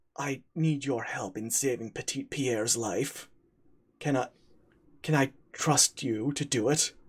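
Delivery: low-voiced, confidential tone. A character turns to the player and asks for help, in a low tone. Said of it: "says in a low tone".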